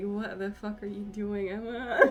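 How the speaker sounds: pretend cat voice. Retelling how her cat looked at her: voicing her cat's reaction. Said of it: "my cat looks at me like".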